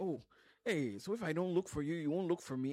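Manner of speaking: loud, lighthearted, play-acted teasing. Quoting what the speaker used to say on calls to friends, playfully retold. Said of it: "And I'll say it very playfully".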